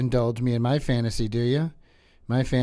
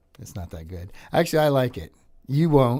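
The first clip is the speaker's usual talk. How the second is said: ordinary talk, nothing marked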